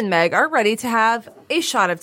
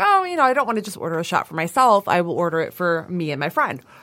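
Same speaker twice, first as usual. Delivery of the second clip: plain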